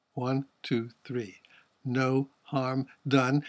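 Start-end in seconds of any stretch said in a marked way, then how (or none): 1.9-3.5 equal heavy stress on no, harm, done. Pointing out a triple stress in a line, equal stress on no, harm, done. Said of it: "one of those triple stresses that always strike my ear and give special emphasis".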